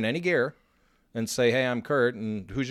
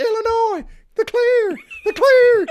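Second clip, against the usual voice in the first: wild, swooping, shrill scream, very high and loud; 10 dB louder than usual. Retelling a host's celebration in a suite: imitating someone screaming. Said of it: "he's screaming".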